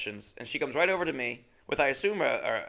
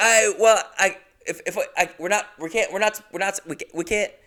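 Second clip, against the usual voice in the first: halting, stop-start tangled stammer, higher pitch; 8 semitones higher, 8 dB louder than usual. Retelling a flustered moment at a counter, imitating own stammering. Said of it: "I just had a bunch of, like, sounds, like I was doing a remix".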